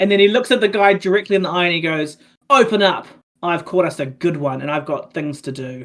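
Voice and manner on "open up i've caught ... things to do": menacing, intimidating, threatening tone. In a tabletop game, a character looks a man in the eye: intimidating. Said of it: "definitely an intimidation roll".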